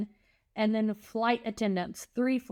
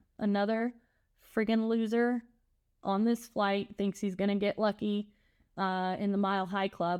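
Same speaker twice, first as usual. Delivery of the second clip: ordinary talk, nothing marked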